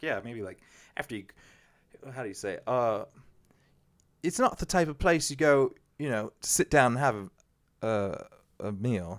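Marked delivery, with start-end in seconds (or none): 2.7-9.2 put-on British accent drifting toward Australian. Recalling a chat with people from the UK about fish and chips; put-on British accent. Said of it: "however they say it in their British accent".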